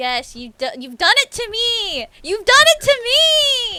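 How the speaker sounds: very loud, very slow, high rising drawn-out shout. Playing a game and protesting to the other player: yelling. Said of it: "I'm sorry for yelling".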